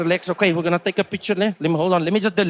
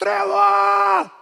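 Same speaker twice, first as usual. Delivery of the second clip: mock very high, raspy scream projected over distance; 14 semitones higher than usual. Retelling a stranger across the street calling out: imitating someone screaming a name. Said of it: "I hear some guy screaming my name".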